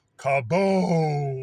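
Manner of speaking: loud booming kaboom explosion sound. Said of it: "you hear this".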